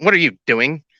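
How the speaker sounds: play-acted affronted, indignant tone, high-pitched. Retelling how a partner reacted when he tried to kiss her: imitating an indignant woman. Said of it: "All indignant".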